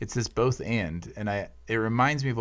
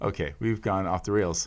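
usual speaking voice

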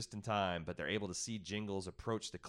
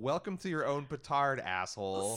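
usual speaking voice

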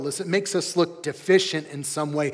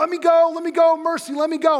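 very high, shrill, frantic, desperate pleading yell; 11 semitones higher, 5 dB louder than usual. Retelling a childhood story of being pinned down, imitating his own past yelling. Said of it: "I'm yelling at him like".

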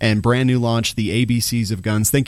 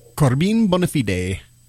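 awful, clumsy put-on Italian accent; 4 semitones higher than usual. Giving a shout-out on a show, the name in an awful Italian accent. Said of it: "that was my Italian accent".

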